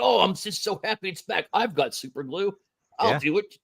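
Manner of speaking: scornful sarcasm in a gullible, easily pleased voice. Imitating fans who are happy to get bad toys: mocking imitation of uncritical fans. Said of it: "You still gonna be like".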